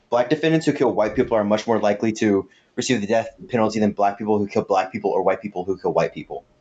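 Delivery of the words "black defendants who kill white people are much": plain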